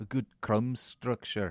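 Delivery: put-on Scottish accent, drifting toward Liverpool. Speaker repeats a phrase from a baking show, now trying a Scottish accent. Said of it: "I'm going to do it in a Scottish accent".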